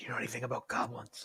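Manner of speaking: hushed, whispered under the breath. Whispering in character to Adorno about nearby arguing goblins: whispering. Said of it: "I whispered to Adorno".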